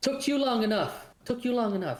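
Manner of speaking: echoing, laughing, very high, giggly teasing voice. Voicing the mist voice teasing a player for being slow: giggling echoing voice. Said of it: "giggling and laughing a little bit".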